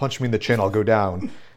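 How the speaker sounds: put-on muttering under breath. Retelling a movie scene where a wrestler speaks under his breath. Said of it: "kind of under his breath".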